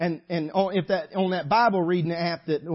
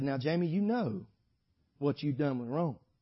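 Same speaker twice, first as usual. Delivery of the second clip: put-on tender voice; 3 semitones lower, 7 dB quieter than usual. Speaking to Brother Sonny, the speaker quotes the Holy Ghost speaking to Jamie, tender-like. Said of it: "the Holy Ghost will talk real tender-like".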